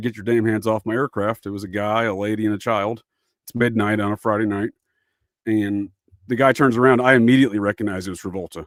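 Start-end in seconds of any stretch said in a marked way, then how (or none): none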